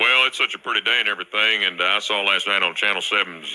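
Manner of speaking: lazy, rambling cable repairman voice. Prank caller posing as a cable worker on the phone with a customer, lazy cable worker character. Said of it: "In this classic prank call, [name] plays a lazy cable worker in order to get on [name]'s nerves and it is hilarious".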